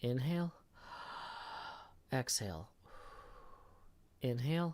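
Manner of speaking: calm coach voice, easy and unhurried. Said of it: "take a second and breathe".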